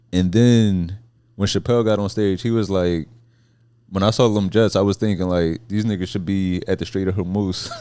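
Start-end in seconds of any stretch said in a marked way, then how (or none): none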